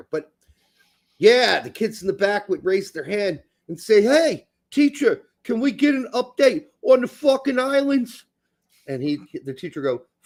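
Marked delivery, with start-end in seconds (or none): 4.0-8.2 put-on pitched-up New York schoolkid accent. Retelling how kids in a New York school asked the teacher: imitating New York accent. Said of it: "we had a lot of accents there".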